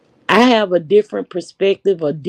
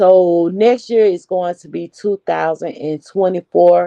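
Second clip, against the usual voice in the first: ordinary delivery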